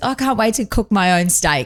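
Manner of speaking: dry sarcastic tone. Retelling what he said when taken to the fridge, imitating his sarcastic tone. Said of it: "like being sarcastic".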